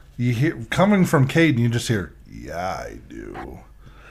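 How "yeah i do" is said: eerie, creepy voice, very low and very soft. Retelling what a strange voice said through another person, weird creepy voice. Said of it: "in this weird, creepy ass voice".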